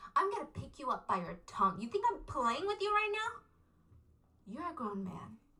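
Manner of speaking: mock, evenly delivered, calm menacing tone. Retelling how Larry threatens Daniel, imitating Larry's calm menace. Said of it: "in this very calm, menacing voice".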